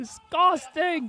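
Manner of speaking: very high-pitched yelling holler. Retelling what a heckler yelled in a crowd: imitating someone yelling. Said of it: "And he yells again".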